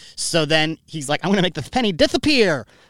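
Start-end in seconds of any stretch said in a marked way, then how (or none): 1.3-2.7 put-on heavy lisp, much higher pitch. Retelling what a boy said at age five, imitating a big lisp. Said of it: "he had this big lisp".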